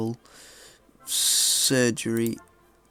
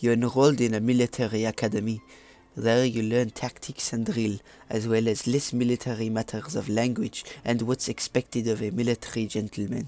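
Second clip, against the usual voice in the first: put-on speaking with a French accent. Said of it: "stop doing my French accent now".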